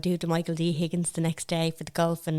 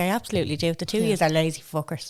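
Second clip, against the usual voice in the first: usual speaking voice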